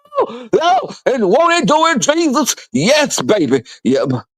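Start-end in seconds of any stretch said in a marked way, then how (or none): 0.1-2.5 very high, swooping, drawn-out preacher yell. Retelling a church preacher's rant: imitating Southern Baptist preacher yelling. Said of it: "them Southern Baptist fucking yelling".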